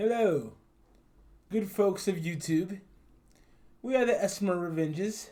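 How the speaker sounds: played-up, put-on British accent. YouTubers introduce themselves to viewers, in a British accent. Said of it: "I'm doing my British accent".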